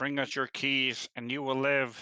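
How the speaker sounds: in-character, put-on threatening, menacing yell. Yelling a demand at the kobolds in character: in-character yell. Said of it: "I'm going to yell out".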